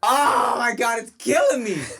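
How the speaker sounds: high, loud, put-on anguished cry.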